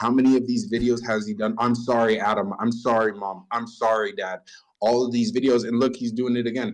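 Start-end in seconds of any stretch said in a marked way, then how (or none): 1.6-4.4 mock crying, tearful voice. Mocking apology videos made while crying to a camera: imitating tearful apology. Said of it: "sitting here crying to a camera".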